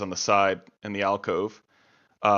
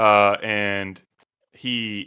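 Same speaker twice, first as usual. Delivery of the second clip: ordinary talk, nothing marked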